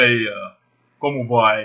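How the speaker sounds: deep voice, low register. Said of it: "a voz do homem é bem mais grave".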